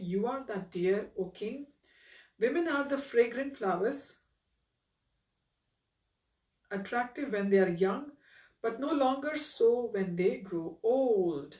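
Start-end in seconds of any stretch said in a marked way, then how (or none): none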